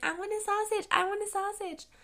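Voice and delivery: put-on cute, very high toddler baby voice. Retelling how, as a small child, you asked your family for the food you were obsessed with, in a cute little baby voice. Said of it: "I had this like cute little baby voice".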